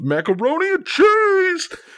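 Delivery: mock very high, brash, swooping New York DJ yell. Describing a video game's announcer call, imitating DJ Bobbito yelling. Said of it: "yelling like a New York DJ".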